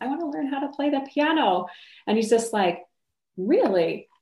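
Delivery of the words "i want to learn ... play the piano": small, tiny, high squeaky voice. Retelling answering his question, in a small squeaky voice. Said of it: "this little voice inside of me squeaked out".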